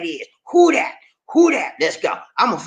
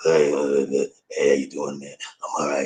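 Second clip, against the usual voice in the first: hoarse, barely audible voice that has given out; 5 dB quieter than usual. Showing how he sounds when his voice goes out: imitating his voice gone out. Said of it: "when my voice goes out, it's bad, man. I sound like".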